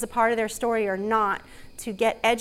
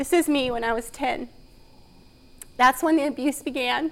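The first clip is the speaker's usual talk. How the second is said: speaking through tears, crying; 3 semitones higher than usual. A speaker showing a slide of themselves at ten, crying. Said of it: "I don't know why I'm crying".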